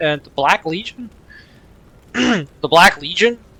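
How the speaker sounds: voice snapping and cracking mid-word. Reading out a dialogue choice while playing a game, voice cracking. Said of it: "I don't know why my voice cracked there".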